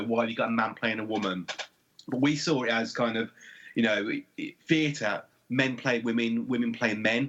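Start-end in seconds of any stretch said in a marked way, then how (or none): none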